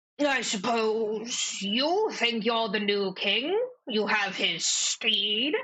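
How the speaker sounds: put-on older frog-creature voice. Voicing an older bullywug with a monocle questioning a player: older bullywug voice. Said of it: "older bullywug come over ... he goes".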